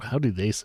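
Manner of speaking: plain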